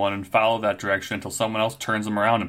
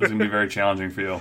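plain

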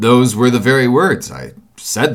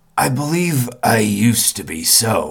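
low, slow, measured voice; 4 dB quieter than usual. The man answers the narrator's remark, in a low voice. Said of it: "sallow man with a dark beard and rather heavy eyebrows. ... in the low voice in which he had first spoken".

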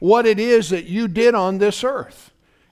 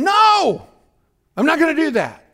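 high, screamed-out outburst; 7 semitones higher than usual. Retelling refusing a man's pressure to smoke, reenacting own scream. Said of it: "I just screamed out".

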